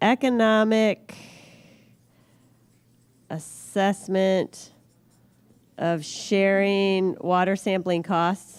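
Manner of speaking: slow, drawn-out, carefully spelled-out dictation. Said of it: "can I just write this up".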